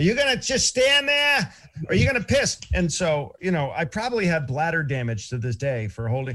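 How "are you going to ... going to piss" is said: put-on very high, loud, shrill Boston accent. Retelling a meathead behind him while he tries to pee, Boston accent. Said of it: "some meathead behind me with a Boston accent going".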